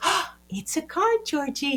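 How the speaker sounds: cheerful, very high-pitched, happy sing-song little voice. Showing how to talk to Georgie, a worried child, as cars pass: happy little voice. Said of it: "I'm going to say in a happy little voice".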